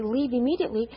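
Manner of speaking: ordinary talk, nothing marked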